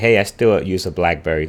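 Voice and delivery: plain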